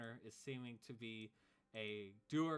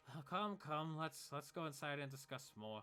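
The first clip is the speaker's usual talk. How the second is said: worn-out, tired, exhausted voice; 3 semitones higher than usual. Voicing a returning wizard who invites the others inside: exhausted voice. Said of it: "exhausted from, he's like".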